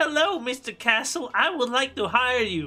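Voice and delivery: put-on little old lady's elderly woman voice. Retelling a scene, imitating an elderly woman. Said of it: "this elderly woman going like".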